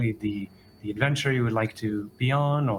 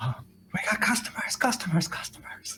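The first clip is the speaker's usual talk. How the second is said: faint, distant, very quiet whisper; 9 semitones higher than usual. Voicing someone heard faintly from upstairs: very quiet voice. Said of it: "you can hear very quietly".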